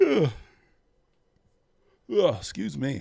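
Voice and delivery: sleepy voice, sound pulled out by a yawn. Waiting and talking to the audience, the speaker yawning. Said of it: "Oh, yawning".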